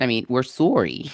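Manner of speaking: bad put-on Canadian accent. Apologizing to listeners after warning of accents: bad Canadian accent. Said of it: "we're gonna have really bad Canadian accents".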